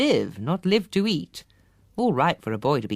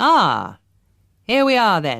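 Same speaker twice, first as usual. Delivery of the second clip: deep, loud, drawn-out, threatening, challenging growl; 5 dB louder than usual. Grandpa, waiting at the steps, greets the arriving family, deep, challenging voice. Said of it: "in a deep, challenging voice".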